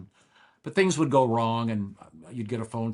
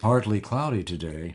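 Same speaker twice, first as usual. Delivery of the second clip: smooth, mellifluous, lower-pitched voice; 2 semitones lower than usual. Describing his old recorded weather delivery, reading the forecast in a mellifluous voice. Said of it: "with a very mellifluous voice".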